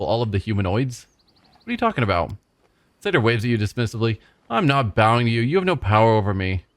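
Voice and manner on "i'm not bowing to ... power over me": loud and slower. A character addressing another figure in a role-play scene, in a loud voice. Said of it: "In a loud voice".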